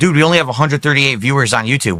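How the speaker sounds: ordinary talk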